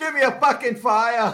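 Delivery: loud, high, laughing, horrible Boston accent.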